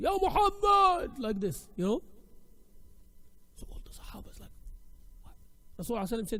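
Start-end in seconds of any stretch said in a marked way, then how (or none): 0.0-1.1 much higher, louder mock rude shout. Retelling how a Bedouin called out to the Prophet, retelling a loud, rude call. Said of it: "with a very loud voice and with no etiquette".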